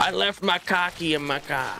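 Boston accent. Joking about how a word sounds, the speaker puts on a Boston accent. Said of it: "sounds like someone with a Boston accent saying car key".

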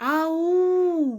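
high, loud, carrying hallooing call.

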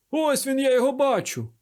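very high-pitched, sudden exclamation. A non-commissioned officer peers through a keyhole and spots the man inside, exclaiming. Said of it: "вигукнув чийсь голос".

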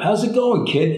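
high, loud, cheery tone.

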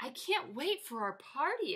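eager exclamation. Reading a bear character among forest animals planning their party: exclaimed. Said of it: "exclaimed Bear".

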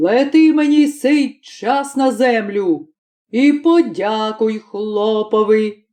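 enraged, angry, scolding voice. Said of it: "Полетів чорт в пекло, та й починає найстаршому чортові, [name]ові, / «Що?» – крикнув, що аж ціле пекло стряслося, розлючений [name]. / та й починає найстаршому чортові, / розлючений [name]".

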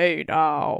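deepest possible voice, pitched very low. Asked to try it without knowing the reference, do a Jeffrey Tambor impression in the deepest voice possible. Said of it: "Say "hey now" in the deepest voice you can possibly do".

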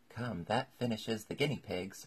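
ordinary delivery

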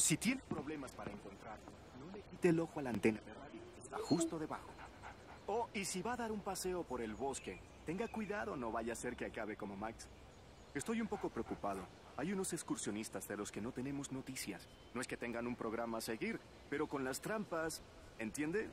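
hushed confidential voice.

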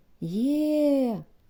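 happy, joyous tone. Answering a lost hunter's shout in the thicket; joyful. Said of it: "радісно відгукнулася Ехо".

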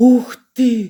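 thrilled exclamation of wonder. Colin, told by Mary that Dickon will visit, reacts; delighted exclamation. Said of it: "захоплено вигукнув Колін".

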